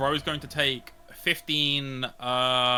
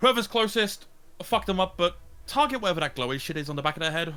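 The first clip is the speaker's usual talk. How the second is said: playful, mischievous, cheeky, pitched-up delivery; 5 semitones higher than usual. Voicing a character giving an order to the party: cheeky command. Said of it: "gonna give a cheeky command of".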